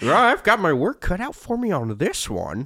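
very high pitch, slow and swooping. Quoting a movie character's line in a horrible Jimmy Stewart impression. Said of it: "a horrible Jimmy Stewart impression".

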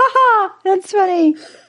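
squeaky voice, way up high. Act out how you shrug things off, in a Mickey Mouse voice. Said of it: "you sounded like Mickey Mouse".

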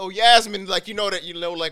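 loud, high-pitched yell.

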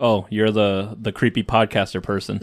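usual speaking voice

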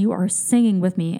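plain

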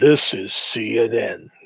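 announcer-style voice in very deep bass. Running through famous deep-voiced lines: James Earl Jones deep voice. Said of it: "See, everybody uses that deep voice".

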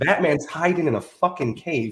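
ordinary delivery

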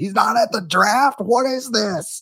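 high-pitched, frantic screaming. Retelling a friend's reaction to a draft pick, imitating a friend screaming. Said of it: "started screaming at the top of his lungs".

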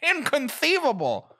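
very high, squeaky one-word cry squeezed out. Doing an impression after another speaker names Wallace Shawn: Wallace Shawn impression. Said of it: "Also Wallace Shawn".

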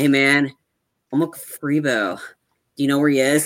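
put-on drug addict voice. Retelling a scene where Dexter acts like a drug addict: imitating Dexter acting like a drug addict. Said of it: "He's trying to act like a drug addict".

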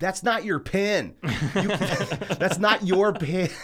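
mock very slow, booming, loud, high delivery. At the bank, retelling calling out to a man pocketing a bank pen, retelling saying it loudly. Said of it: "I loudly went".

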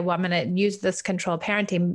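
normal talking voice

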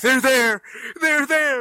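shrill, very high, very loud horror-movie scream. Retelling the fiance knocking on the door during wasps: imitating fiance yelling like a horror movie. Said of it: "yelling at me ... being like a horror movie".

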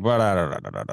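low, self-important voice. Imitating a guest who sounded pompous: imitating Peter Zeihan lowering his voice. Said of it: "lower his voice and he's like".

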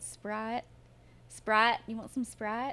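put-on very thick, heavy Southern accent. Mocking how an aunt says a word, in a thick Southern accent. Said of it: "very, very thick southern accent".

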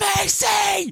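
screaming at the very top of the lungs.

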